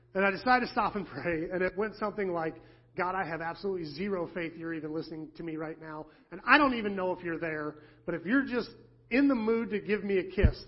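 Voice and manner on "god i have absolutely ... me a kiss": ordinary talk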